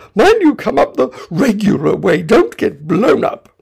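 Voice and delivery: high, loud, hurried crying out.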